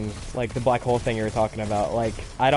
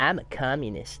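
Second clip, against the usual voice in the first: put-on edgy voice of a thirteen-year-old kid; 6 dB quieter than usual. Reading a line he sees aloud, in an edgy thirteen-year-old kid voice. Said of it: "I like have to read it in a thirteen year old edgy kid voice".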